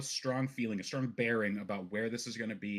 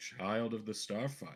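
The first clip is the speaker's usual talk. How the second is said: put-on elderly man's voice; 4 dB quieter than usual. Narrating a scene where an older man looks up and greets you, in an older man voice. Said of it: "an older man looks up to you and goes".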